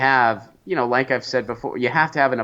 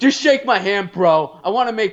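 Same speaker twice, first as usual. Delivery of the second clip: put-on pushy, drunk, bullying voice pitched higher; 9 semitones higher, 4 dB louder than usual. The speaker compares someone to a drunk bully, imitating a drunk bully. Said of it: "like a drunk bully that's like".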